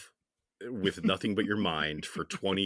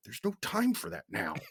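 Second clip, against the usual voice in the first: very high-pitched mutter under the breath; 14 semitones higher, 3 dB quieter than usual. Speaker imagining a character's aside while promising to wait, mock muttering under breath. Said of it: "under his breath going".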